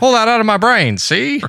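put-on old-timey 1950s-style voice. Asked to do their 50s voice, the speaker uses a 1950s-style voice. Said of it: "You can do your 50s voice".

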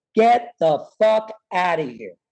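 put-on yelling. Recounting being thrown out of a building, imitating someone yelling. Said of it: "They yelled at the top of their voice".

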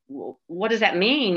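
mock distraught, frantic, stammering cry of disbelief. Retelling asking a doctor what no brain activity means: retelling own screaming. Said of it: "and I'm screaming".

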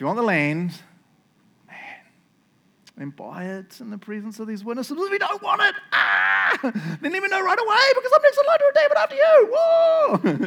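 mock nervous excited schoolboy voice. Retelling Boaz's offer in his imagined voice: imitating anxious schoolboy excitement. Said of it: "my, like, schoolboy impressions, 'cause he's so anxious excitement".

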